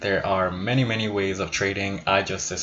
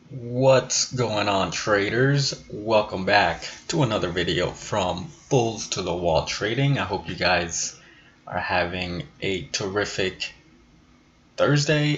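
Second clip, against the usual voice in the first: unhurried, slow, drawn-out delivery. Channel host greeting traders at the start of a video, speaking slowly. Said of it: "I don't know why I'm speaking so slow".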